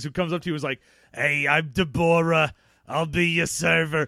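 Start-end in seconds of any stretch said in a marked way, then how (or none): 1.1-4.1 slow, loud smoker's diner-waitress voice. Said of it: "a chain smoker that works at a Denny's".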